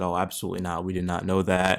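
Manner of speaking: usual speaking voice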